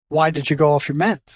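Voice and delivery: plain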